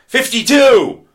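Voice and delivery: shouting. Explaining 52 factorial to listeners, shouting.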